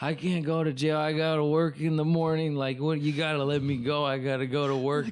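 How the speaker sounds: mock tearful, high-pitched, speaking through sobs. Retelling begging the police to let him go to work: retelling own crying plea. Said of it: "I'm fucking crying and telling them".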